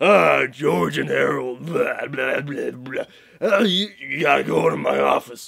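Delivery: growly, grumpy, rough growled voice. Describing how Mr. Krupp sounded when reading the books, in a growly grumpy voice. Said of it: "more of like a growly, grumpy voice".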